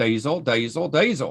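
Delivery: attempted, put-on Australian accent. Retelling a man's repeated reply to Amy's question, in an Australian accent. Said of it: "I'm going to try to do an Australian accent".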